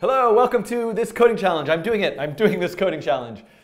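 stiff, forced, fake presenter voice, high and loud. Host restarts the intro to his coding challenge, sounding forced and fake. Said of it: "That sounded very forced and fake".

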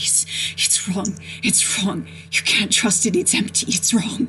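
incoherent rambling, repeating over and over. A prisoner just woken from a vision, incoherent repetitive rambling.

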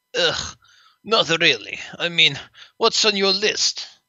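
put-on Russian accent held throughout. Voicing the T-34 tank, invited on a scavenger hunt, in a Russian accent. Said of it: "Let's get you of a Russian voice".

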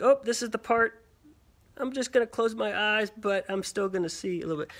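ordinary talk, nothing marked

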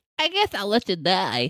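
high-pitched, slow, unhurried drawl. Retelling how Quentin Tarantino answered an actor: Quentin Tarantino impression. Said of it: "God, I hate that voice".

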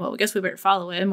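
ordinary talk, nothing marked

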